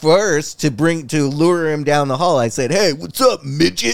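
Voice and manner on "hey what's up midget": raspy, creaky, rough, high-pitched put-on voice. Retelling luring someone down the hall: Bam voice. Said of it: "I did it in the Bam voice".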